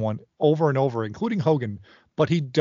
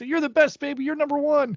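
very high, excited cheering hype-man voice; 12 semitones higher than usual. Imitating a wrestling manager cheering for his guys: imitating Jimmy Hart cheering. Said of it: "All he does is cheer for his guys".

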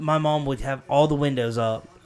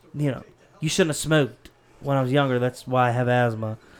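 mock snide tone, faster. Retelling a jab once made to Mom, retelling a snide remark. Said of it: "some snide-ass shit to her".

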